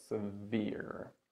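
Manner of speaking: se-VERE, weight on the second syllable. Teaching words for cold injuries: stress on second syllable of severe. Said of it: "this word is stressed on the second syllable".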